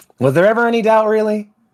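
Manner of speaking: smug, smirking, very high-pitched tone. Voicing the sergeant answering over squad comms: smirking tone. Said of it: "hear the smirk in his".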